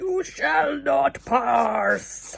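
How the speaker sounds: pirate-sounding put-on voice. Speaker quotes a Gandalf line in a Gandalf impression sounding like a pirate. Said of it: "that sounded like a pirate then".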